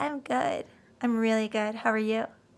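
put-on soft, sweet, babyish little voice. Retelling a couple's meeting, the speaker voices the woman's reply in baby voice. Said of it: "she talks like a baby".

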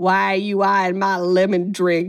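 acted, slow, venom-laced, menacing delivery. Quoting a horror-movie character's line to another character, with mock venom. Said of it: "says it with such venom".

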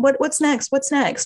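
high, tiny, small inner voice.

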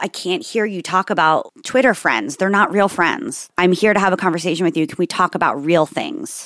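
usual speaking voice

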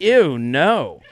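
plain

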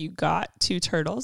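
ordinary talk, nothing marked

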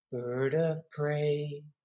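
soft, hushed, fully half-whispered. Retelling what a truck driver said outside a pub: imitating someone half-whispering. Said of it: "looked at me dead in the eyes and whispered".

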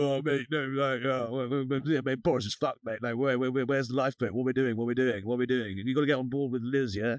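matey chatter, rattled off quickly. Retelling a phone call from a minister urging support for Liz: imitating Kwasi. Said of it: "Quasi's giving it the".

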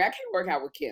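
usual speaking voice

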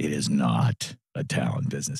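slow, deep, hushed, drawn out, deliberate. Speaker restates a point they both agreed on: really slow and deep. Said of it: "let me say that really slowly and deeply".

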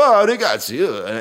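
put-on Italian accent. Discussing accents people can do, the speaker gives an example; italian accent. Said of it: "I could do an Italian, I could go".

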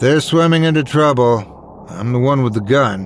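plain

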